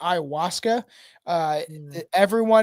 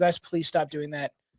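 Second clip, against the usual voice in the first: scared, worried voice, lower and quieter; 4 semitones lower, 5 dB quieter than usual. Retelling begging friends to stop sitting on a high balcony railing: imitating own scared plea. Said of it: "it scared me".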